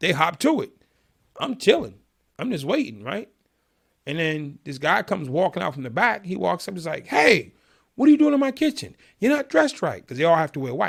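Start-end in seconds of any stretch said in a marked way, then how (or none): 7.1-10.0 put-on, very high, shrill, high-pitched yelling. Retelling a man who walks out from the back, imitating someone yelling. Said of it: "He's yelling at me".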